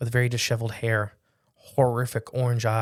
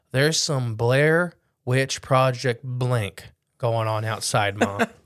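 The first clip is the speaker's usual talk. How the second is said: ordinary delivery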